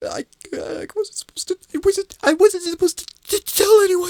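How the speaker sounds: shaking voice, teeth chattering. Pressed about his delivery, the character answers, voice shaking, teeth rattling. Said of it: "his teeth rattling in his jaw".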